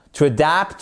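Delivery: "adapt" with stress on its second syllable. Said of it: "votre accent tonique ici sur la seconde syllabe".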